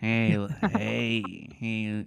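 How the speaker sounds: very slow voice with every word drawn out. Mentioning a movie, then doing an impression: Jack Nicholson impression. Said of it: "I forgot I do this impression".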